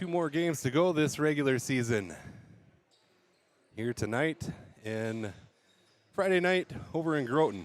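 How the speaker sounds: puffing, breathless, winded announcing delivery. Speaker has just gone up three flights of stairs: out of breath. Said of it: "I am out of breath".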